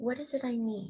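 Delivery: genuine, compassionate, caring tone. Contrasting a blaming question, asking what one needs: compassionate question. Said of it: "really ask that with compassion. Do you hear how I'm asking that?".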